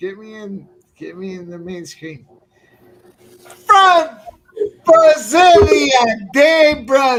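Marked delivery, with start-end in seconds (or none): 3.6-7.2 very loud, booming, slow, drawn-out announcer voice. Answering a request to do a Bruce Buffer impersonation: Bruce Buffer impersonation.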